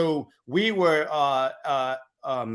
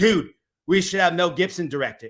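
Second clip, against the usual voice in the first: plain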